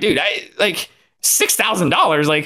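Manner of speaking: high, incredulous, exasperated outburst. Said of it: "And I'm like".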